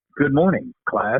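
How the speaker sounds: put-on mellow, stoned, laid-back 1970s radio DJ voice. Retelling school morning announcements done in imitation of radio DJs: imitating a 1970s stoner DJ voice. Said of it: "in that nineteen seventies era, uh, cool weed smoking sounding D J voice".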